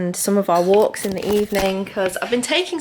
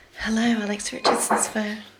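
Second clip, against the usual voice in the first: put-on sexy, seductive film spy voice; 2 semitones higher, 3 dB quieter than usual. Offering to answer another speaker's ringing phone: sexy Bond voice. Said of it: "a sexy Bond voice".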